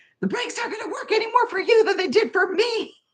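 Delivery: play-acted very high, shrill, panicked shout. Speaker retells answering someone who offered to drive, retelling a yell. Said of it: "And I'm like yelling".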